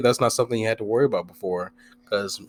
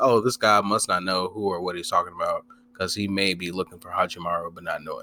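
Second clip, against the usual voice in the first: ordinary talk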